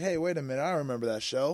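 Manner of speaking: ordinary talk, nothing marked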